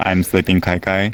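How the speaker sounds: ordinary talk, nothing marked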